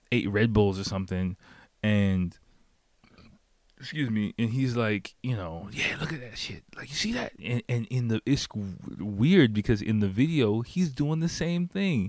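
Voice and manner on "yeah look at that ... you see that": mock pumped-up, amped-up excitement, fast and pitched up. Retelling a pumped-up man pushing his phone in his face: imitating a pumped-up man. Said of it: "pumped up".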